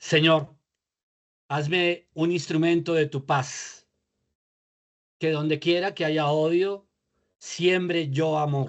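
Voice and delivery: slow, unhurried reading with pauses between phrases. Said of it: "a leer despacio".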